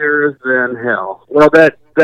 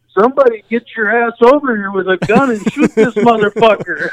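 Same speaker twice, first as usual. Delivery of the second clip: high-pitched, play-acted yell, as if to far away; 7 semitones higher than usual. Recalling yelling across a pond to a group while defending oneself, retelling a yell. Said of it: "I'm yelling at the group".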